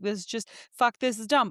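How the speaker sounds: angry outburst voice. Retelling own irrational anger over a little thing: imitating own angry meltdown. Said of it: "the littlest thing will set me off on a meltdown".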